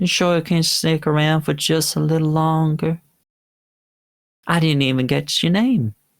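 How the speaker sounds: sulky, coaxing, high-pitched and pouty. Voicing a character who asks a departing player to stay: pouty. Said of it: "She kinda makes a pouty face".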